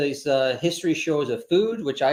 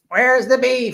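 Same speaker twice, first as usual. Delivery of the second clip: bad put-on old lady voice, high and loud; 9 semitones higher, 5 dB louder than usual. Speaker quotes the little old lady from an old commercial, in a bad old-lady impression. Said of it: "It's a bad impersonation".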